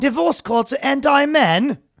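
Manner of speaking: very high-pitched, put-on British accent. Doing a Prince Harry bit in the studio: Prince Harry impression. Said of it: "British accent's not as, not too bad".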